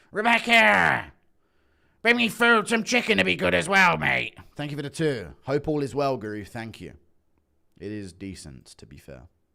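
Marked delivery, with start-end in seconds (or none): 0.1-4.3 loud, pitched-up hollering voice. The speaker imitates Michael Bisping calling his wife to bring food: Michael Bisping impression. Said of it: "Impression of Bisping".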